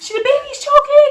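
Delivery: very high, loud, panicked scream through tears. Retelling running down a hallway with a choking baby: retelling screaming and crying. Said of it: "I was screaming and crying".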